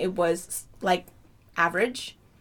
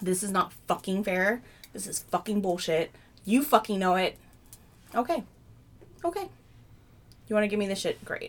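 furious, tearful outburst, angry crying. Retelling a meeting where she was reprimanded: imitating her own angry crying. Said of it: "I angry cried so hard".

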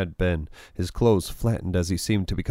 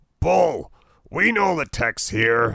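big, booming, pitched-up declaration voice; 7 semitones higher, 4 dB louder than usual. Narrator reads a man's retort to the hostage-takers' contact, booming. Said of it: "the man boomed".

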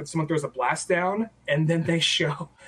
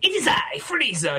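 pompous posh voice, high, slow and lofty; 8 semitones higher than usual. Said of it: "a pompous, kinda poshy kind of voice".

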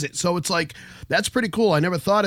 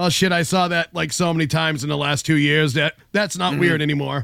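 ordinary talk, nothing marked

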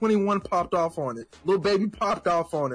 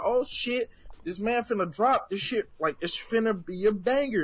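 usual speaking voice

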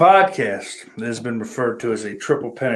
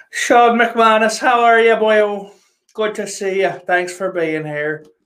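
very high put-on Irish accent; 10 semitones higher, 3 dB louder than usual. Host greeting guests at the start of a late show, in a put-on Irish accent. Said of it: "but I'm talking in a fucking voice".

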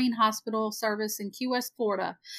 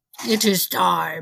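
put-on spooky, low, ominous doom voice; 5 semitones lower than usual. Opening the podcast, a host announces the start: scary voice. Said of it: "That was kind of scary voice".

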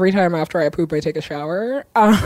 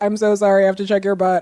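put-on voice spoken with a grin. Retelling how the doctor apologizes before an exam: imitating an apology said with a grin. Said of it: "she always says it with a grin".

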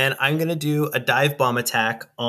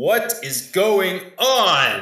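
dramatic, commanding, high swooping call, "on" drawn out; 5 semitones higher than usual. Flying overhead in a game, the player's character yells at them: booming yell. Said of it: "try to yell with a booming voice".

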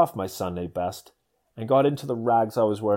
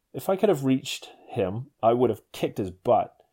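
ordinary talk, nothing marked

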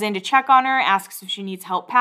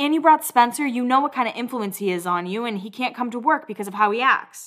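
plain

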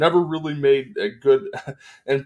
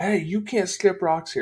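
mock screaming, high-pitched yell; 6 semitones higher than usual. Retelling a neighbor yelling from a house: imitating someone screaming. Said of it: "started screaming".

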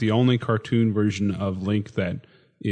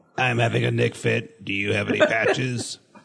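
put-on electrolarynx voice. Imitating how Mega Man talks in a cartoon: Mega Man voice-box voice. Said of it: "his esophagus removed, and he has one of those voice boxes".

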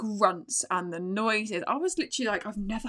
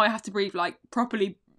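ordinary talk, nothing marked

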